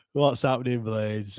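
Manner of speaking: mock broken, dejected-sounding voice. Telling the other host how they opened their show, imitating a broken voice. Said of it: "you sounded so broken".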